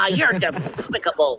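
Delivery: cartoon duck voice with lisp. Describing how a cartoon duck should sound, says it in a Daffy Duck lisp. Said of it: "sound like he talks with a lisp".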